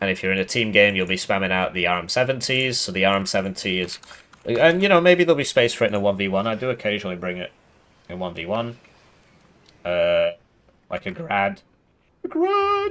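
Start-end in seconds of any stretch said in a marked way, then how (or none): 12.2-12.9 voice cracking and breaking up very high. Naming a unit while going over a game division: voice cracking. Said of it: "my voice is breaking".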